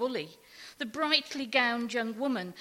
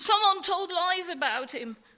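high-pitched, raised crying out; 7 semitones higher, 5 dB louder than usual. Reading a story, Barney answers a remark about his father, crying out. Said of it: "cried Barney".

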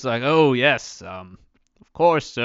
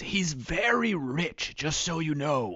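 barely audible, very quiet confiding half-whisper; 2 semitones higher, 9 dB quieter than usual. Narrating a scene, a character leans over to the player, half-whispering. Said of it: "leans over to you and whispers".

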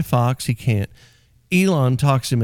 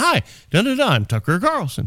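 high, swooping, bouncy up-and-down sing-song inflection; 7 semitones higher than usual. Imitating a TV host's up-and-down inflection: Tucker Carlson impression. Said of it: "talk with his inflection and his up and down".

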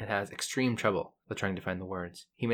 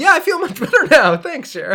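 put-on sincere voice, much higher, louder; 14 dB louder than usual. Describing a game scene, the speaker quotes Guybrush at the end: Guybrush, mock-sincere. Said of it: "Like in this totally sincere voice".

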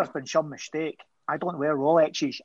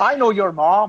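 put-on sinister, menacing Northern Irish accent; 5 semitones higher, 8 dB louder than usual. An actress, asked for a proper accent, has another go: sinister Northern Irish accent. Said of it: "sinister Northern Irish terrorist".

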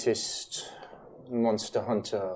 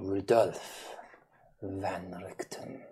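whisper, lower pitch; 2 semitones lower than usual. A storyteller voices a woman who answers Gabriel with a name, whispering. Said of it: "the voice in a whisper".

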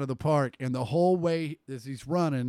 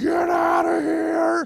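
very high, stretched-out, raspy, rough drawn-out scream; 8 dB louder than usual. Recalling the moment a World Series hit went out, retelling a scream. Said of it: "I remember screaming".

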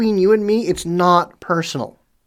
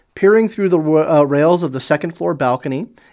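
ordinary delivery

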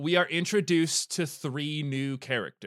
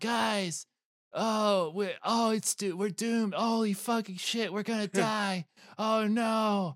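put-on boy voice, higher, slower; 6 semitones higher than usual. Mocking a show character he hates, the speaker does a Cody impression. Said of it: "He talks like this all the time".

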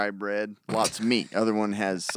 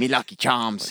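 clumsy, bad put-on Irish accent; 2 semitones higher than usual. Joking after admitting trouble, bad Irish accent attempt. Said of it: "I can't do an Irish accent".

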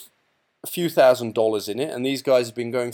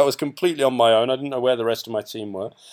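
ordinary talk

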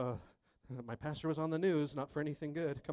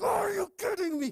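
mock angry outburst, much higher pitch; 7 semitones higher than usual. Pastor retells being refused a gas station bathroom with a 2-year-old, retelling an angry outburst. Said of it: "I'm ready to like put my fist through the window".

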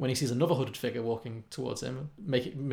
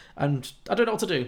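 usual speaking voice

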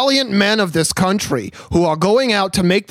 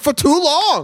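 worked-up, pitched-up ranting; 7 semitones higher than usual. Parodying the Bernie speech meme, mock riled-up Bernie Sanders impression. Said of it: "he gets himself riled up and he's like".

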